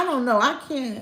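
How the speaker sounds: plain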